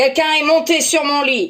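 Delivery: big, gruff, loud voice. Reading a fairy tale aloud, voicing papa bear: very big gruff voice. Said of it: "dit papa ours d'une très grosse voix".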